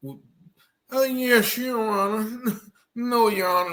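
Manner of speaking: put-on, very high, slow, tearful crying. Commenting on a news clip, mocking a man in court: mock crying as Ryan Michael Bate. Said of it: "like crying".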